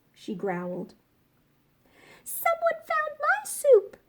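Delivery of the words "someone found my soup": very high, squeaky, sputtering voice. Narrator reading the three bears story, Baby Bear speaking after Mama Bear, Baby Bear's high, squeaky voice. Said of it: "in her high, squeaky voice".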